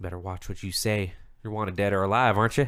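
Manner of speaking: threatening voice. Voicing a guard, hand on pistol, warning a prisoner: threatening guard voice. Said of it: "his hand kind of, like, goes down over his pistol, and he's like".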